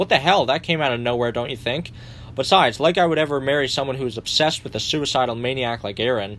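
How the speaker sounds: usual speaking voice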